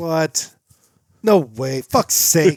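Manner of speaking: loud, high, shocked disbelieving outburst. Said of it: "And I'm like".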